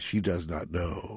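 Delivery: low, solemn, funeral-like voice. Retelling a scene where a man answers about a distraught woman; Kirk at Spock's funeral voice. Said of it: "in his best Kirk at Spock's funeral voice".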